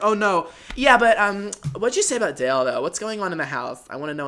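put-on breezy California valley girl voice. Retelling what she said during the night, in a valley girl impression. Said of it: "just a general Valley Girl impression".

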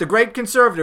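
ordinary talk, nothing marked

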